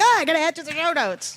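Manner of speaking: play-acted loud, high, sudden blurted exclamation. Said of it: "Sorry, I know that was loud".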